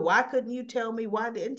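ordinary talk, nothing marked

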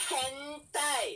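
high, loud, screaming tsundere voice. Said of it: "she sounds like the type of person who just scream".

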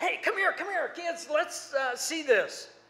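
play-acted eager excitement. Retelling Dad running into the house calling the kids: imitating Dad's excitement. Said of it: "all excited".

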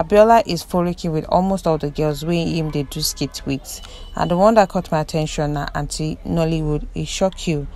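ordinary talk

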